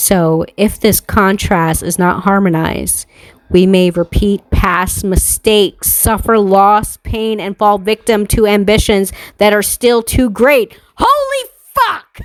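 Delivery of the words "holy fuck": very high-pitched, sudden yell. After reading a passage aloud, the speaker reacts to the listener: yelling. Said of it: "I didn't mean to yell in your ear".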